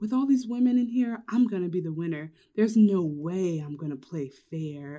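sinister yet sexy delivery. Retell what the queen says when she comes on, as a New York impression, sinister and sexy. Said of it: "you do an amazing New York impression".

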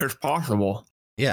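chewing, talking through a mouthful. Answering another speaker about a game, talking with mouth full. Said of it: "sorry talking with my mouth full".

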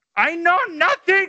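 blurted out, very high-pitched and comic. Doing more impressions of sitcom characters: Schultz impression.

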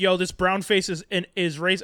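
plain

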